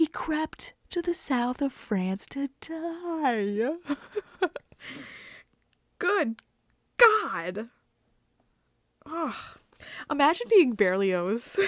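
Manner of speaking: amused, speaking through laughter. Reading about a composer's final breakdown, laughing while talking. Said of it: "I don't mean to laugh".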